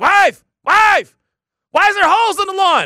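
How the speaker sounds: very high-pitched, very loud yell. Speaker retells finding holes all over the lawn one Sunday morning: retelling yelling to the wife. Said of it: "I'm up here yelling to the wife".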